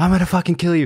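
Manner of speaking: shrieking, furious scream, very high. Speaker recounts a man banging on a driver's window, retelling a furious scream. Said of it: "he's like screaming at this guy".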